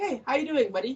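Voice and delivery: laid-back, easygoing, creepy-casual chilled voice. Retelling a scene where a creep greets someone at the door: imitating a chilled creep. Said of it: "he's all chilled".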